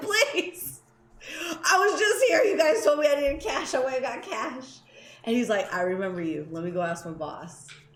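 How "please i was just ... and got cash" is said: put-on begging, desperate, on the verge of tears. Retelling pleading with the man closing the gates, acting out an almost-tearful plea. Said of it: "I'm almost in tears".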